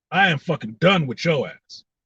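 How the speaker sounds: angry, fed-up, sick-of-it tone. Ranting about a person added to a personal list: angry. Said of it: "I'm angry".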